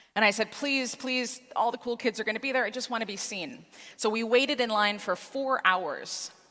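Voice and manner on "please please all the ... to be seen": acted, earnest, imploring pleading, begging tone. Retelling asking dad to go to the haunted house: imitating begging. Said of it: "I begged my dad".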